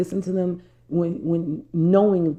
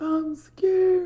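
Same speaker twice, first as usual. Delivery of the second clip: imitated small, scared little-kid voice, higher; 13 semitones higher than usual. Retelling a jet ski ride, imitating own small scared voice. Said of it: "I sound like a little five-year-old".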